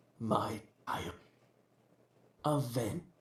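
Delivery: deep, whispered womanly voice. Game narrator voicing a voice heard from the depths, deep yet feminine voice. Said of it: "A deep yet feminine voice".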